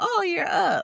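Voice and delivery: high, loud, pitched-way-up put-on grandma voice. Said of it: "And that's what it sound like".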